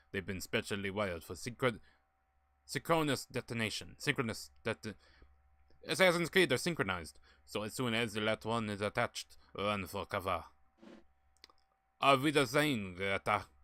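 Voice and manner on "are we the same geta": slow, loose put-on French accent. Streamer voices a game character's line to Geta: attempted French accent. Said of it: "I'm not even sure if I'm even doing a French accent".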